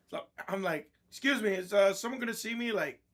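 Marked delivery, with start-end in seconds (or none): 1.1-2.7 mock sharp, raised, pitched-up voice, just short of yelling. Retelling asking the lot techs at a service counter: imitating own sharp raised voice. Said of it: "I raised my voice, not to yelling, but that one stage before yelling".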